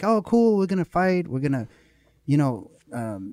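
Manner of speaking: high, loud, eager voice. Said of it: "They're like".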